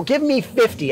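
ordinary delivery

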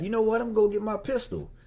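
high, mocking put-on voice.

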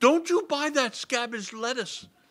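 put-on high, big, bold little boy voice. Narrator reads a small boy backing up in front of a woman, in his biggest voice. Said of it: "saying in his biggest voice".

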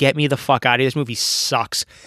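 ordinary talk, nothing marked

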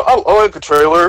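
stumbling, hesitant mock voice. Answering how he feels about the trailer: imitating Wolf. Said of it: "are you mocking Wolf right now?".

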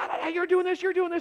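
put-on very high-pitched screeching scream. Retelling a high school argument: imitating someone screaming. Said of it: "the one guy was screaming".

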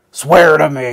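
very loud, booming bellow at full force. Retelling a scene where he hangs a guy off a cliff: Batman impression. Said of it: "he's like".

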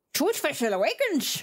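horrendously bad put-on Irish pirate voice. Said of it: "horrendously Irish in, like, the worst way possible".

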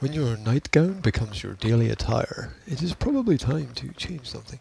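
mock public-radio announcer voice. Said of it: "uh, N P R voice".

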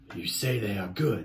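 contemptuous, dismissive, scornful sneer. Reading a story, a bear answers a rabbit boasting of his ears, sneering. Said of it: "said the bear with a sneer".

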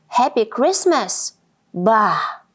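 grumpy, shouting loudly. Grumpy Badger, at his window, shouts back grumpily at Squirrel's greeting. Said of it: "he shouted back".

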